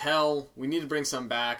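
normal talking voice

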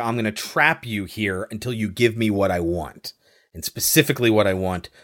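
ordinary talk, nothing marked

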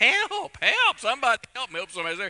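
very high, loud, swooping yelling cries. Recounting a fall with a foot caught in the stirrup, retelling yelling for help. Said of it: "I'm yelling".

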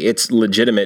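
ordinary talk, nothing marked

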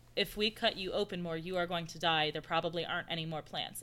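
ordinary talk

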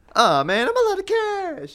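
very high, swooping, drawn-out voice. Repeating the sketch line a third time: bad Adam Driver impression. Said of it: "That was definitely the worst impression".

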